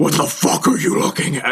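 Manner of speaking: demonic, possessed-sounding voice. Retelling what a friend said as a pillow was thrown, demonic voice. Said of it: "in like a, a demonic voice".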